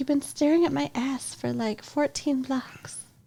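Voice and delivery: line voiced in character as a woman. Retelling a story's plot, the speaker quotes a woman, impersonating her. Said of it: "Good impersonation".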